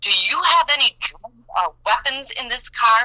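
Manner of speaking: put-on police officer voice, screaming and barking. Retelling what the officer screamed at a traffic stop: imitating Officer Gary Schultz screaming. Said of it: "he screamed".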